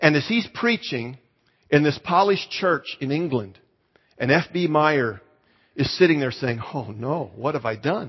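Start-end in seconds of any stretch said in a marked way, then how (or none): 6.7-8.1 soft, murmured, embarrassed dismay. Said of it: "He was embarrassed".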